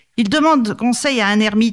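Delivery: ordinary delivery, nothing marked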